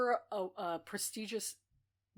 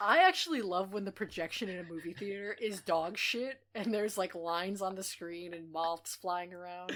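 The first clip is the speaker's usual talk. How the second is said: ordinary talk, nothing marked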